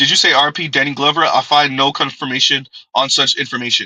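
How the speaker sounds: ordinary delivery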